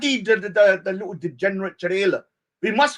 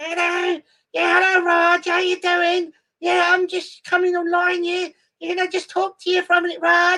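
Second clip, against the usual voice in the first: squeaky, very high chatter; 9 semitones higher than usual. Tease Eunice about how he normally sounded when coming online to Raj, in Eunice's squeaky voice. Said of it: "normally you had a squeaky voice".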